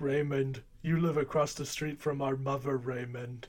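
dumbed-down, dopey, stupid-sounding voice. Doing an impression while discussing a film cast: Brad Garrett impression. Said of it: "make him sound stupid, and then you get Brad Garrett".

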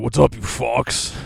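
gruff, loud, slow, drawn-out rough voice. Retelling how a fiance imitated the speaker's greeting: imitating the speaker. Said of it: "my lovely fiance did her impression of me".

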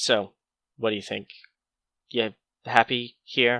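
put-on extreme deadpan, very flat delivery. Describing a film scene, quoting a co-star's line, imitating extreme deadpan. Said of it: "It's deadpan, but just to the nth degree".

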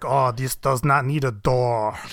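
put-on heavy German accent, slow and laid on thick. Mimicking the scientists in The Right Stuff scenes, in a thick German accent. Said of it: "it's just thick German accents like".

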